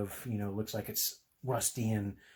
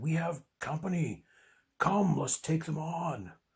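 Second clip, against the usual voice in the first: gruff, slow, deliberate orc monster voice; 6 semitones higher than usual. A game narrator voices an orc speaking to its companion, in a gruff orc voice. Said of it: "In the gruff words of an orc".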